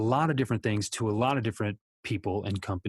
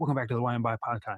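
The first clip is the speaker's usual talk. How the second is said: very fast, rapid-fire, rattled-off delivery. Podcast host welcomes listeners back, testing how fast he can say it, as fast as possible. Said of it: "see how fast I can say that".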